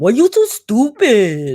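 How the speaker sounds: fake Mexican accent, high-pitched, slow and drawn out. Quoting how a woman says it to someone, in a fake mexican accent. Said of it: "that fake Mexican accent".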